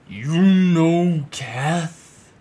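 booming, very loud, high bellow. A rusting metal figure steps forward, crosses its arms and calls out, bellowing. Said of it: "bellows out".

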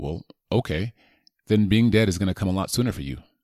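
ordinary talk, nothing marked

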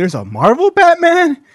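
put-on high, loud, incredulous girl voice pitched way up.

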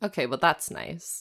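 whispered, soft, breathy, disappointed tone. Reacting to a book passage just read aloud, in a disappointed tone. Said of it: "You sound so disappointed".

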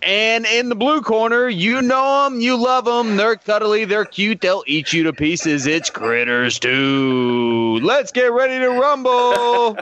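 fight-night ring announcer voice with two stretched out. Announcing the next movie matchup after being asked: Bruce Buffer announcer voice. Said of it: "you gotta get that Bruce Buffer voice going on".

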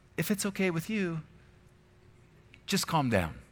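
meek, soft, timid pleading voice. Mocking how some imagine Jesus speaking to the waves, in a sissy Jesus impression. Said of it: "like he was some sissy".

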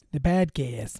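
Boston-accented speech. Podcast host goofing off mid-episode, saying a word in a Boston accent. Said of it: "I'm talking like a guy from Boston".

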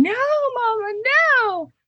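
put-on very high, heart-wrenching child's scream. Retelling a preschool drop-off tantrum: imitating a child screaming. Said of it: "as he's screaming".

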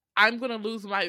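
ordinary delivery

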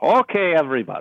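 fake, unconvincing Irish accent, loud and high. Speaker redoing a robotic police voice as Irish-sounding, in a bad Irish accent. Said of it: "that's not Irish at all sounding".

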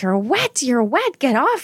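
rising yell.

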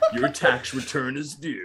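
put-on, dramatic movie trailer announcer voice. Retelling a scam call claiming to be the IRS: imitating a movie trailer announcer voice. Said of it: "hire that movie trailer guy".

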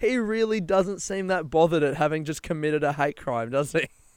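normal talking voice

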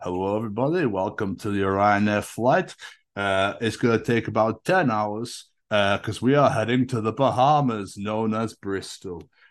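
imitated very deep voice. Retelling a ryanair flight announcement, doing the steward's deep-voiced impression. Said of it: "he had the deepest voice".

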